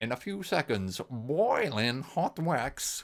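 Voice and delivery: very slow, every word carefully sounded out. Quoting the voice on a tape: imitating the tape voice's enunciation. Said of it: "where he goes".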